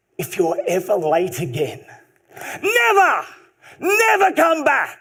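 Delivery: put-on slight Italian accent, animated, swooping pitch. Retelling a furious old coach's warning about lateness, slight italian accent. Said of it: "with a slight Italian accent".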